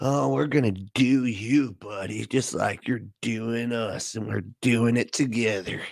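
put-on sexy, suggestive tone. Mimicking the other speaker's line back at him, mock-sexual tone. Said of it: "Why does he always manage to sound sexual?".

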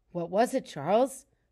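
plain

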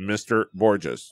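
automated, robocall-style robotic computer voice. Imitating an unnamed company's phone call, in a robotic computer voice. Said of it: "then computer voice".

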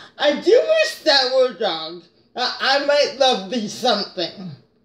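sarcastic delivery with a swooping tune. In an acting exercise, reading the line again on cue, sarcastic line reading. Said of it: "get that sarcasm".

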